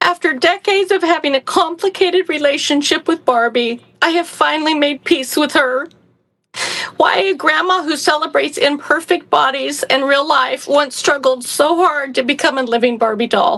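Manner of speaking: tearful, choked-up, crying voice. Reading out a story pitch about Barbie, crying while speaking. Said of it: "I don't know why that made me cry".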